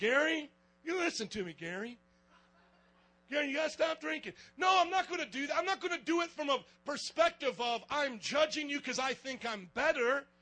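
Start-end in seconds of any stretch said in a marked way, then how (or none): 0.0-4.3 put-on, preachy, sermonizing voice.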